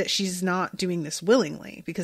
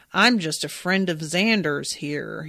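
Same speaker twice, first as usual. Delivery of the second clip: terrible, clumsy, badly faked American accent; 3 semitones lower than usual. Speaker recalls Buffy, quoting Spike passing as human: Spike's terrible American accent. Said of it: "put on that terrible American accent".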